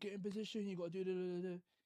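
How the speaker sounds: mock fired-up high yell. Retelling telling teammates to get in position: imitating own past passionate yelling. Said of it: "I'm being passionate".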